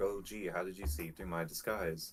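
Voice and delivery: play-acted, dripping, laid-on-thick heavy sarcasm. Retelling own reply to a greeting, mock-sarcastic. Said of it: "Real, real sarcastic".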